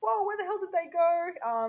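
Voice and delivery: high, panicked, alarmed, freaked-out tone. Retelling a mother who comes back to find her kids gone: retelling someone freaking out. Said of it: "she's freaking out".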